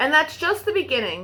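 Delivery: ordinary delivery, nothing marked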